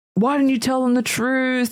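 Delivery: acted, high-pitched yelling outburst. Retelling a film scene where a woman confronts people in church: imitating Rose yelling. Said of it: "And she's yelling".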